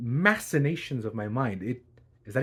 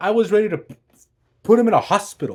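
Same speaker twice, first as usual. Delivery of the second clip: ordinary delivery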